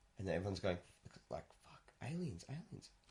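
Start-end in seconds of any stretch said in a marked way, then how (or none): 1.7-2.9 put-on whisper, higher and quieter. Retelling a movie trailer where everyone panics: imitating a whisper. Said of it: "Why are you whispering?".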